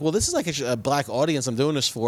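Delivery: ordinary talk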